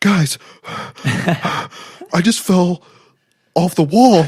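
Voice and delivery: breathless, very drawn-out, very slow, high panting. Retelling a friend coming back after falling off a wall: imitating panting speech. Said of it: "he's panty".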